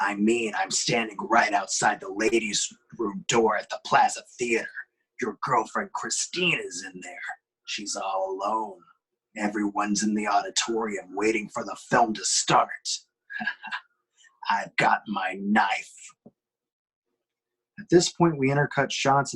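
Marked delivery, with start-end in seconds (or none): 0.0-15.9 harsher, angrier tone. Reading a script aloud, the caller threatening by phone: harsher, angrier voice. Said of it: "it now sounds a lot harsher".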